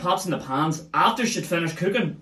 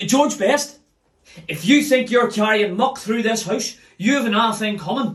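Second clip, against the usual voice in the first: mock scolding yell, high-pitched, shouting; 6 semitones higher, 4 dB louder than usual. Retelling how mum met him at the doorway: imitating mum shouting. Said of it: "and she shouts".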